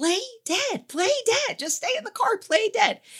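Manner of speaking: play-acted, very high-pitched screaming. Retelling what was yelled at the screen during a scene: imitating own screaming. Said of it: "And I am screaming".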